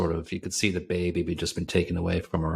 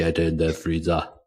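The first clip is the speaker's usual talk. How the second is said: put-on Austrian accent; 4 dB louder than usual. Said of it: "you put the Arnie accent on too".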